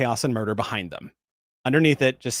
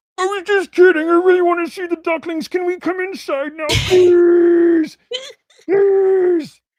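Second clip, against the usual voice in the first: thunderous whine, very high and very loud; 8 dB louder than usual. Narrating, voice a Gorn engineer outside the med bay doors: thunderous, whining Gorn voice. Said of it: "the thunderous, whining voice of a Gorn engineer go".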